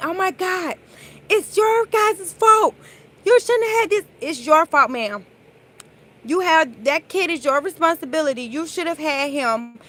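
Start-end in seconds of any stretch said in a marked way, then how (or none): 0.0-4.0 high, loud, angry yell. Retelling how the parents reacted after their child was pulled in: imitating parents yelling. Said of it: "his mom and dad was yelling".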